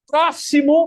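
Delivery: loud, high shout.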